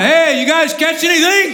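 sarcastic high call. Retelling a figure on the beach calling to fishermen: imitating a sarcastic call-out. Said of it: "crying out sarcastically".

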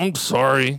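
mock mumbled, slurred speech. Acting out a child forced to apologize: imitating a mumbled, slurred apology. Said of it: "comes out in this weird, blurry, slurry mess".

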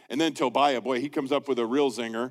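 ordinary delivery

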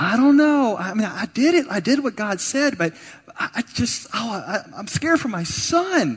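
frightened, halting fretting. Acting out a frightened Israelite neighbor talking over the back fence: acting a scared, stammering neighbor. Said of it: "and he's like".

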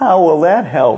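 high, tiny little kindergartner voice. Retelling a kindergartner's question from the back of the room: little tiny child's voice. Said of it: "little tiny voice".

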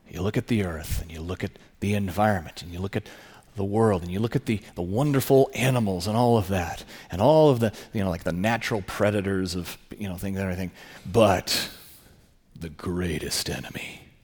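dark, throaty, guttural sinister voice. Recalling a remembered soundbite about the earth: imitating a sinister, guttural, accusatory voice. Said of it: "this sinister, you know, guttural kind of accusatory voice".

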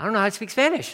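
panicked, high, panicky, freaked-out voice. Retelling a friend's shocked reply about speaking spanish: imitating a friend freaking out. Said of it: "he's freaking out".

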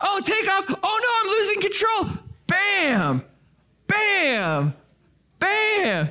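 very high voice for a flying fish. Retelling how someone swung a hooked fish while voicing it: imitating someone voicing a fish. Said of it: "he would do this narrative of the fish".

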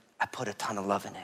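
close, hushed half-whisper with no voice. Retelling what she said into the ear after a kiss: imitating a half-whisper. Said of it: "she whispers in my ear".

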